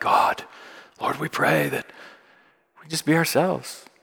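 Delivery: really serious, soft, overly serious prayer voice. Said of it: "sound like Keanu Reeves in this really serious voice".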